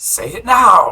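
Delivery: yelling in a loud booming voice. Describing the action, the speaker yells the command in a booming voice. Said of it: "I just use my booming voice, and I yell".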